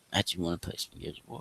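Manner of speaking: soft, breathy whisper, barely voiced. Retelling how Clyde asks to play Gears of War, imitating Clyde's whisper. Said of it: "And he'll say he'll say it in a whisper".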